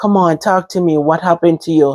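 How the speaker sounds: ordinary talk, nothing marked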